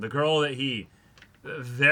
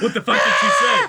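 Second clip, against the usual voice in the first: put-on panicked voice, higher and louder; 6 semitones higher, 7 dB louder than usual. Acting out Taichi's rattled thoughts: Taichi's panicked inner voice. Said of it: "his panicked mind is just like".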